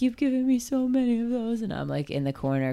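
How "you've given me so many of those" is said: high, tearful, emotional, teary voice. Retelling a speech at an event, imitating a teary voice. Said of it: "he got all teary and was like".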